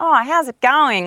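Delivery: very strong, loud, high broad Australian accent. Asked what a too-Australian accent is, showing a very strong Australian accent. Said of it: "What's a too Australian accent?".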